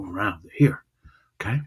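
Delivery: plain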